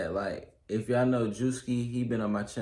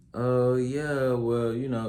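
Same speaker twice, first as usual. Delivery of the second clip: mock sarcastic, slow, dismissive brush-off tone; 2 semitones higher, 3 dB louder than usual. Imitating a friend's reply to news of a new car: imitating a sarcastic reply. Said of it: "they just acting sarcastic".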